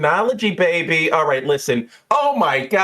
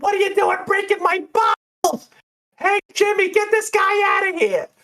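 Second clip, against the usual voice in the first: piercing, shrill voice, very high pitched. Retelling a phone call where someone yells over bottles breaking, in a shrill voice. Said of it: "you hear like this shrill voice go".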